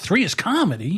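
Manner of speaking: heartfelt delivery. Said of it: "you don't say it with feeling".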